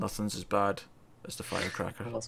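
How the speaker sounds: acted, very quiet, hushed, flat, low-key deadpan. Recounting a film scene, retelling Luke Wilson's deadpan. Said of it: "just stops deadpan and goes".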